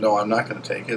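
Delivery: plain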